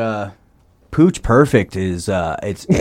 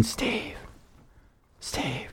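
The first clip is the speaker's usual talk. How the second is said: barely-there, very quiet whisper; 16 dB quieter than usual. Retelling someone left alone in the room whispering to the editor, retold whisper. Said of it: "he just started whispering".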